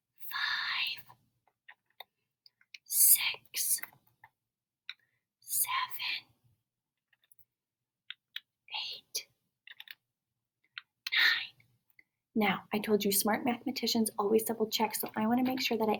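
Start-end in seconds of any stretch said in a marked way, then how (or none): 0.3-12.5 very slow, whispered delivery. Counting pieces aloud with young mathematicians, whisper counting. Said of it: "Whisper count".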